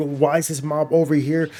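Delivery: plain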